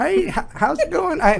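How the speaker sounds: put-on Texas accent. Speaker imitates a producer's assistant greeting them, imitating Lynn Corzine's Texas accent. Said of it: "Just very pleasant Texas accent".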